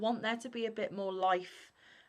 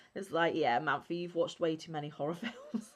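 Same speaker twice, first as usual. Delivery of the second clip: normal talking voice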